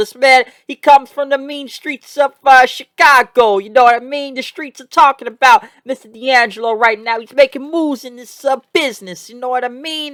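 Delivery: bad Italian accent. Recapping someone's win, the speaker talks him up in a bad italian accent. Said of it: "I'm done making uh, an Italian accent".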